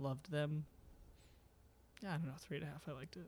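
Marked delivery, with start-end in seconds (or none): 2.0-3.3 defeated, deflated, much quieter voice. Giving a rating of 3.5 during a group discussion; defeated. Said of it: "You sound so defeated".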